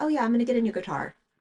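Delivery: acted, easy, offhand, matter-of-fact casual tone. Frustrated by spending, the speaker quotes Rob's offhand announcements: imitating Rob's casual tone. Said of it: "he'll just casually be like".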